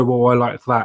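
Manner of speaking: ordinary talk, nothing marked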